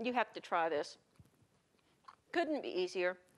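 speaking with mouth full. Tasting the bread while presenting the meal, talking with mouth full. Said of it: "Pardon me, my mouth's full".

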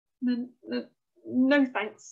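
stammering. Invited to see the Chamber of Pain, Oliver declines, stammering. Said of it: "stammered Oliver".

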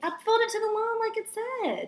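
hollering, pitched way up, very high. During a messy cooking attempt with mom, answering back, hollering. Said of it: "Why are you hollering at me?".

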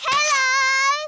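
calling out loudly. Calling to a slug after being told to say it louder: shouting louder.

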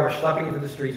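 plain

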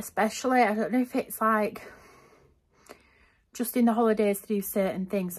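out of breath, breathless. Back from a full day out, telling viewers about the visit, out of breath. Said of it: "I'm out of breath".

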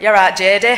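put-on loud, even worse Scottish accent. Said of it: "in an equally worse one".

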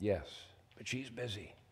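put-on very quiet, barely there little-boy whisper. Telling a joke, voicing a little boy on the phone: imitating a whispering little boy. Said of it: "still whispering".

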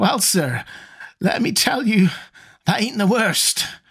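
nearly screaming in frenzy. Reading old Zadok's rant to a listener: nearly screaming in mad frenzy. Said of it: "Zadok was nearly screaming now".

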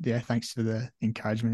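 ordinary talk, nothing marked

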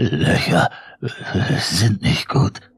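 shaky theatrical whisper. Narrator reads the words whispered from behind the door, in a trembling whisper. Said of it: "flüsterte es mit zittriger Stimme".

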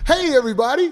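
commercial announcer voice. Recording a promo for the early shows: commercial voice. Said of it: "let me get my commercial shit on".

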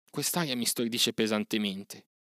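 plain reading voice

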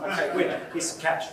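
ordinary talk, nothing marked

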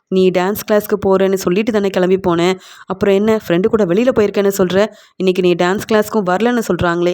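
ordinary delivery

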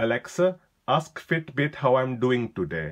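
put-on loud, strong Indian accent. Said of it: "Let's try a strong Indian accent".

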